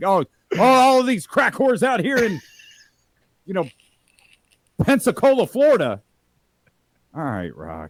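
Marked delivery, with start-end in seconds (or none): 0.0-6.0 loud, pitched-up, bellowing wrestling promo voice. Mocking the Rock's unchanged wrestling promos: imitating the Rock's promo. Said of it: "Even as the final boss, he's out here".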